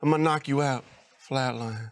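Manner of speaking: hushed, whispered, menacing threatening tone. Retelling a man's trash talk to someone he was insulting, whispered threat. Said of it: "why are you whispering it?".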